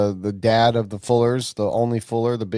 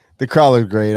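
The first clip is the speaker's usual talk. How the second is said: loud, cracking up, laughing through the words; 6 dB louder than usual. Chatting with others about race tracks, laughing while talking. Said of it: "I'm cracking up at my own fucking doings".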